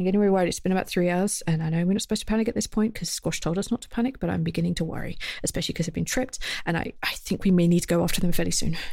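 soft, confiding whisper. Voicing a character who leans down, hugs a player and whispers: whispering in character. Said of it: "she whispers".

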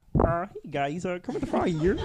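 put-on cartoon frog voice. Asked by friends to do Kermit, performing a Kermit the Frog voice. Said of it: "Do Kermit".

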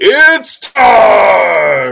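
loud, high-pitched announcer call, long drawn out. Imagining someone as a fight announcer calling out: Bernie Sanders announcer call. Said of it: "I would have paid for Bernie Sanders to be the announcer and just go".

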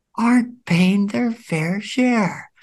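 mock politician voice, whisper to yell. Showing a favorite impression bit: Biden impression whispering then yelling. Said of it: "the whisper to the yell".

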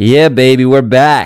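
on-air radio presenter voice, show-opening announcer style. Opening another episode of Jeff FM, the host switches into his Jeff voice. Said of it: "Let me do my Jeff".

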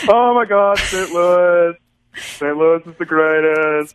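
put-on high, teasing cartoon dad voice. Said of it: "That's my Michelle impression".

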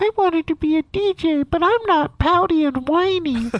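very high-pitched, comedian-style voice. Joking about wanting to be a DJ: Jim Gaffigan voice. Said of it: "That's like a Gaffigan voice".

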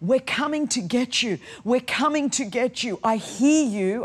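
re-enacted yelling. Recounting waking soaked in bed, she repeats what she was yelling: retelling a yell. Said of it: "I was yelling".

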